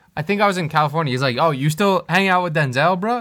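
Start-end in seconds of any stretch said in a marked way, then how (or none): 1.3-3.2 play-acted salty, condescending, talking-down tone. Retelling what a friend said about hanging out: imitating Avi's condescending tone. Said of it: "He said it in a condescending tone".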